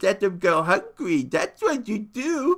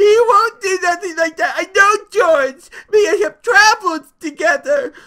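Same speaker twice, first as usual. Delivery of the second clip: very high, frantic pleading through tears; 12 semitones higher, 8 dB louder than usual. Narrating the story, Lenny answers the rabbit, crying out frantically.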